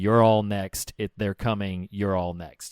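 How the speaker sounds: ordinary talk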